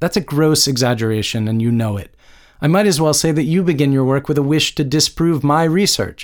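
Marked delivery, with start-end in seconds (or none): none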